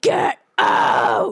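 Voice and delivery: loud yell with the voice dropped deep. Recounting screaming at a man in a parking garage: retelling a lowered-voice yell. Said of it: "Except like I'm lowering my voice".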